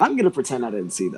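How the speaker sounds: ordinary delivery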